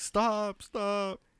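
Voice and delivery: high, near-tearful, begging voice. Recounting how a guy stuck on a top bunk reacted: imitating someone almost crying. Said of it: "He was like crying almost".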